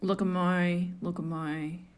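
put-on Australian accent. Showing the hosts a quote after saying she can't do Australian: Kath and Kim quote. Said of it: "But I can quote Kath and Kim".

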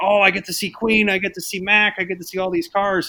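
put-on high, gushing voice of an excited little kid. Retelling his reaction to a parade video before the plane ride, imitating an excited child. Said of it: "of course he was all excited".

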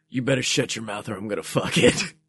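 low, fast, soft, menacing growl.

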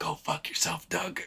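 hushed, breathy whisper, right into an ear. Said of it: "What if you just whisper".

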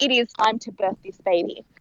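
ordinary talk

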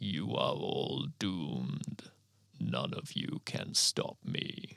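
very slow, rasping mechanical whisper. Narrator voicing a cloaked humanoid rushing the fallen, in a rasping mechanical voice. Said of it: "From the falling rubble walks a large humanoid in a dark cloak, dragging a sword along the ground and carrying a large shield. ... it calls with a rasping mechanical voice before rushing towards those who are still struggling to recover from the impact. ... it rasps as it straightens up".

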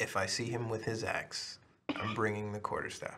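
grave, earnest, very quiet, hushed tone. Stating a plan against someone carrying an axe: very serious tone. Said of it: "Very serious tone".

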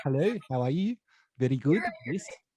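forceful, in-your-face South African accent. Describing how South Africans talk: forceful South African accent. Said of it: "quite in your face a little bit".

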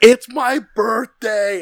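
full-throated scream, very loud and very high. Recalling when their knight won, retelling screaming at the king. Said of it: "I'm screaming at the king".

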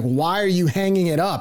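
half-voiced, screaming outcry. Retelling a reaction to a pitch on tv: retelling screaming at the tv. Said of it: "I'm screaming at the T V".

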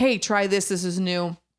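plain

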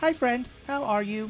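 high, stiff, mechanical, machine-like robot voice. Greeting a buddy at the start of the podcast, in a robot voice. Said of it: "Robot voice".

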